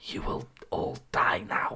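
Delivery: slow, raspy, creepy whispered ghoul voice. Describing ghoul-like enemies in a game, mimicking their whispery, raspy creepy voice. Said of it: "whispery, raspy voices saying stuff like".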